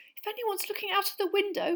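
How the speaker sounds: very high, little squeaky voice. Narrator reading Hermione's line as they leave the castle, squeaking. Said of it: "Hermione squeaked".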